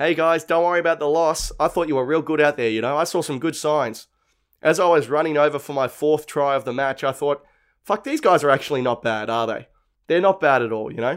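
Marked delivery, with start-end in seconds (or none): none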